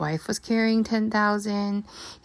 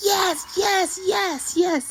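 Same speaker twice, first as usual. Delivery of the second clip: very high, very slow, drawn-out whooping cheer; 11 semitones higher than usual. Speaker recalls a man cheering after losing a stack of chips, retelling a big hoo-ha voice. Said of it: "he had like a big hoo-ha voice".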